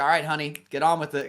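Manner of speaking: brisk, urging, hurrying voice. Imitating a woman in the audience at a comedy club: imitating a theater director. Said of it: "almost like she was the, like, a theater director that's like".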